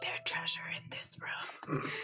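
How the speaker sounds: very quiet, hushed whisper, barely there. A player speaks as her character to the group, very quiet whisper. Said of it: "very quietly whisper".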